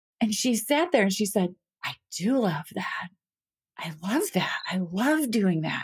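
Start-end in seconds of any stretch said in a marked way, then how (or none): 1.8-5.8 happy, heartfelt, delighted, glowing, gushing enthusiasm. Retelling a friend's reply about her natural genius: imitating someone delighted. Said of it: "you could hear it in her voice".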